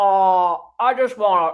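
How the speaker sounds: low, creepy drawl with drawn-out "oh". Quoting a man speaking on a Zoom live: Sling Blade voice. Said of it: "He sounds like Sling Blade".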